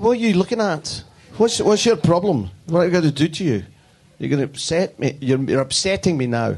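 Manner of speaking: put-on Glaswegian accent. Asked to tell the rest of his story with his Glaswegian accent. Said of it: "Can you tell the rest of the story with your Glaswegian accent?".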